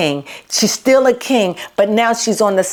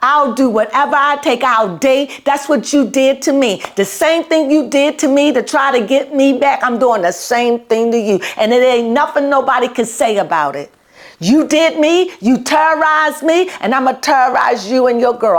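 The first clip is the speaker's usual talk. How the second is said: angry, vengeful declaration, words full of anger; 4 semitones higher than usual. Retelling what she says to him, acting out her angry words. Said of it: "I feel anger".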